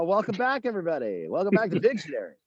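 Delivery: put-on TV game show host voice, swooping pitch. Explaining the fun of hosting a game show: game show host voice. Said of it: "get a game show voice".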